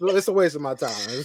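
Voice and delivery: plain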